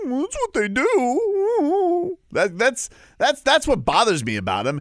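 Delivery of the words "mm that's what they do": high, very slow, drawn-out puffed-up put-on voice. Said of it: "he doesn't just puff out his chest".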